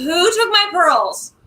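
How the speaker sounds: high, shrieking, wailing giant-ghost voice. Speaker describes the ghost of the butcher's first wife, imitating her screaming. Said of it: "she's just screaming".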